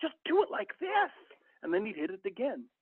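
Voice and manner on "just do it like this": very high, loud, upset, frustrated screaming. Speaker retelling a man yelling at players who kept failing, retelling a man screaming. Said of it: "he started screaming at them".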